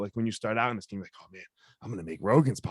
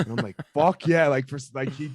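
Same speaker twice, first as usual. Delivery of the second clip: ordinary talk, nothing marked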